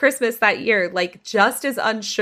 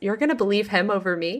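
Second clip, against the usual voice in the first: play-acted dry, level, deadpan delivery; 3 dB quieter than usual. Retelling someone's answer to the parents' question at the table, retelling a deadpan reply.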